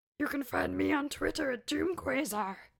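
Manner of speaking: puppet voice, mix of frog and monster. Sharing their Twitter handle with listeners, in a Muppet voice. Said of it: "is that your Muppet voice?".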